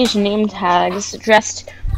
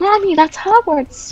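put-on small child calling out, very high; 10 semitones higher than usual. The game master voices a little kid in the scene: little kid crying out. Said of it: "you hear a little kid cry out like".

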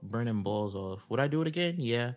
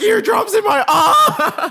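shrill shriek, very high and very loud; 16 dB louder than usual. Retelling how he reacted to eardrops, imitating him screaming. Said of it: "He's screaming".

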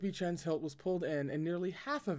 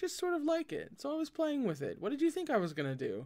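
very high, teasing, inquisitive, swooping rising lilt; 10 semitones higher than usual. Narrator reads Wei Wuxian answering Lan Wangji about his sword, in an inquisitive tone. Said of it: "said Wei Wuxian in an inquisitive tone".

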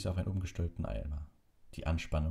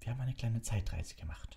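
whisper, much higher pitch; 5 semitones higher than usual. Hidden in a dark broom cupboard, she answers the boy's question: whispered. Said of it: "flüsterte Hermine".

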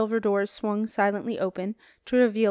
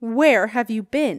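loud, insistent, hard-pressing demanding tone; 5 dB louder than usual. A woman reaches a man who has just turned up: demanding. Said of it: "she demanded".

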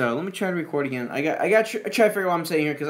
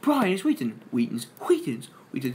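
put-on cartoon baby voice, lower pitch; 3 semitones lower than usual. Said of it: "what the Brian and Stewie were arguing about".

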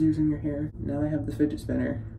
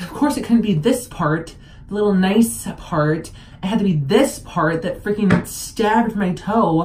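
pained, frustrated voice; 4 semitones higher, 9 dB louder than usual. After a screwdriver fell on the speaker's toe, in pain and frustrated. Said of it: "It hurts so bad".

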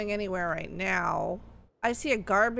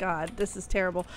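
ordinary talk

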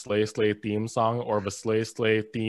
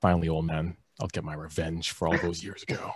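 low, muttered under the breath; 5 semitones lower, 3 dB quieter than usual. Sage speaks while everyone rants in unison, muttering under his breath. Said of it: "Sage mutters under his breath".

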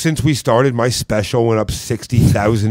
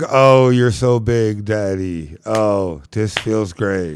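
put-on fake pleasure, lower; 2 semitones lower than usual. Joking with friends about a sex toy, voicing it with mock fake pleasure. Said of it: "even my pocket pussy fakes it".

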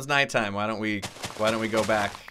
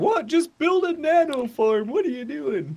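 very high, raised complaining voice; 5 dB louder than usual. Imitating what viewers say about the farm: imitating viewers' complaint. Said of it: "People are like".

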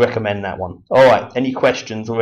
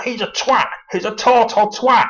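mock furious, high, drawn-out angry voice; 12 semitones higher than usual. Retelling two callers slagging someone off: imitating angry name-calling. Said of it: "they're just really, really angry".

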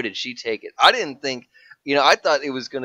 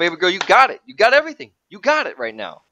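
put-on yell, higher; 6 semitones higher, 4 dB louder than usual. Retelling watching a battle, imitating yelling at the tv. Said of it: "I'm yelling at the T V".

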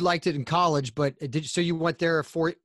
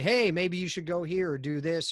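plain

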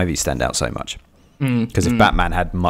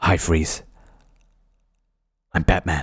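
understated, held-in delivery with a little snarl. Showing how he would do the Batman line, do a Michael Keaton impression with a little snarl. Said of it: "With that little sort of snarl".

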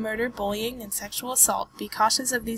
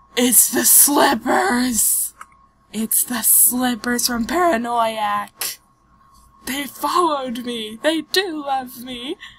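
loud, very slow, drawn-out fangirl geeky gushing; 6 dB louder than usual. Spotting familiar slippers from another game: geeking out excitedly. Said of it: "I had to geek out a little bit".

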